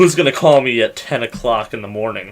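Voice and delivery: ordinary talk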